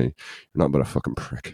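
mock mumbling under breath. Retelling what he said to a man during a confrontation, retelling a mumbled insult. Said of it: "much mumbly didn't shout it out".

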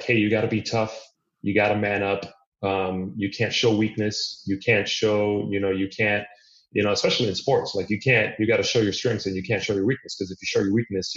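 normal talking voice

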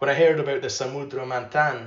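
Spanish accent. Narrating childhood memories of myths, slipping into an accidental Spanish accent. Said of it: "I don't know why I did that in a Spanish accent".

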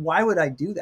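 ordinary talk

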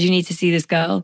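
ordinary talk

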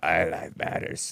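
breathy, barely-there, almost whispered. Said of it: "I can't even do the vocal fry".

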